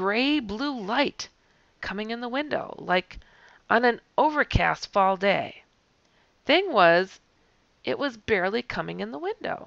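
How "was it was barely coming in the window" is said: normal talking voice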